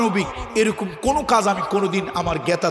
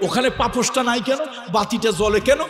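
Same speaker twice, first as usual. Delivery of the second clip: high-pitched, bossy, mock scolding voice. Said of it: "showdown করার জন্য".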